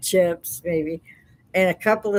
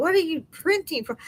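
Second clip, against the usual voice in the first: mock, high-pitched, exasperated scolding yell; 11 semitones higher than usual. Retelling scolding a grandson for printing instead of cursive: imitating own past yelling. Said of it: "I kept yelling at him".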